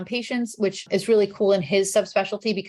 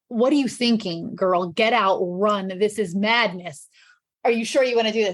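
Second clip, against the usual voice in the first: put-on very earnest voice. Retelling an aunt's warning about medical school: imitating someone very earnest. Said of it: "With this very earnest".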